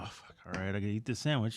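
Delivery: mock, very quiet, defeated, resigned sigh of surrender. Retelling how they give up at the table: imitating own resigned giving up. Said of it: "I do sort of just give up and just go".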